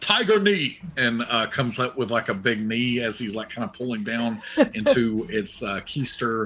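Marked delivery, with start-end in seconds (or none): 0.0-0.8 very high, yelled battle cry. Narrating a game attack, the character grabs at it and yells out a battle cry. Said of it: "just yells out".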